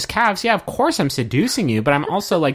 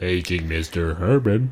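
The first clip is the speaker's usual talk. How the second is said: put-on robotic dubbed-over voice, much lower; 9 semitones lower than usual. Talking about a man whose voice was dubbed over, do a robotic dubbed-over voice impression. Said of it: "It's a really good impression".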